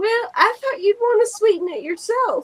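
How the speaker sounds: put-on sugary sweet accent, very high pitch. Quoting what she said back to him: sweet accent. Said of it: "she said in her sweet accent".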